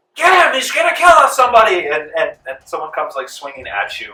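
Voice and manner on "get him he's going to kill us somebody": very high, very loud, shrill, frantic panicked scream. Voicing a crowd member yelling to attack the shooter: crowd member yelling. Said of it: "someone yells".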